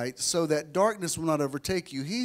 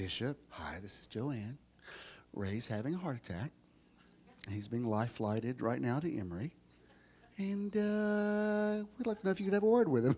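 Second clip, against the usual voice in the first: very calm, soft, quiet voice; 4 semitones lower, 7 dB quieter than usual. A bishop retells a phone call reporting a heart attack: retelling Joanne's very calm voice. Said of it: "in her very calm voice".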